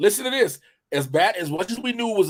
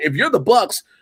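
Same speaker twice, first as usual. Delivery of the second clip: plain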